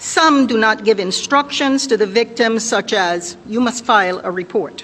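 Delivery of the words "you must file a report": ordinary talk, nothing marked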